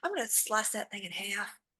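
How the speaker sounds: hushed mutter under the breath. Speaking in character, muttering under breath about slicing a thing. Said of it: "just under a breath".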